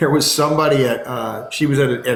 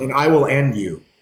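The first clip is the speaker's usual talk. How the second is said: put-on very calm, confident, assured tone. Retelling a younger brother standing up to a bigger kid: imitating a very calm threat. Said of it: "Just very calm".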